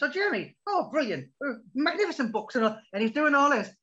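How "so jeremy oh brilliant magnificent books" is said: high, nervous, gushing rambling voice, pitch lifted. Imitating a manager talking with his hand over his mouth: imitating Martin talking behind his hand. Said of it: "he puts his hand over his mouth and he's going to me".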